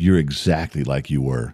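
soft, secretive half-whispered aside. Retelling what the mother says, leaning in where no one can hear: imitating mother's half-whisper. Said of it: "she'll whisper and go".

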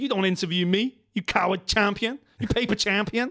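put-on American accent, trash-talking fighter style. Speaker imagines a fighter taking the mic to confront DC: Curtis Blades American accent. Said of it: "What's that accent?".

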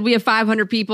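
ordinary delivery

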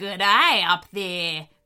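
dingo-like growl on the words. The lead dingo calls up to animals hiding on a climbing tower, growling. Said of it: "growled the lead dingo".

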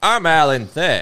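put-on quaint old-fashioned delivery. Imitating Alan Thicke, who talks old-timey with a deeper voice. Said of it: "kinda talks like old-timey, but with a, like, deeper voice".

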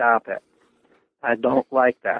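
normal talking voice

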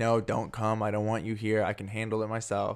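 ordinary delivery

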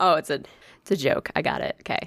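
usual speaking voice

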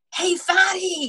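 mock very high, sudden, shrieking screaming yell. Retelling a video that suddenly played: imitating Cole Robinson screaming. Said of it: "this guy screams".

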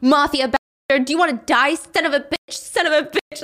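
unhinged, super aggressive, high-pitched rage. Recapping a fight scene, the narrator voices Kevin stomping on Jason in unhinged rage. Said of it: "he's unhinged".

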